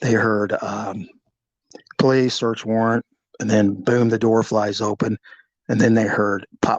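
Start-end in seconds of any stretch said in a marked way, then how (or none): none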